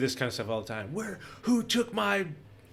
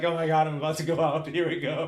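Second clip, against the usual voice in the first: put-on laughing while talking; 2 semitones higher than usual. Speaker retells being grabbed and wrapped up on a trip, retelling laughing speech. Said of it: "I'm just laughing like".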